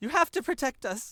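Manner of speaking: very high-pitched shouted call, yelled out. Voicing a character as combat begins in darkness: Lady Lenora yelling. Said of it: "Lenora yells out".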